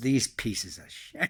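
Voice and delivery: put-on muttering under breath. Retelling what a companion said about signing non-disclosures: imitating muttering under breath. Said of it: "He said under his breath".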